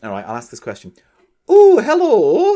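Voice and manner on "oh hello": put-on very high, very loud Scottish accent. Reading out a listener's question: imitating a listener's Scottish accent. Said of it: "I'll do it in her accent".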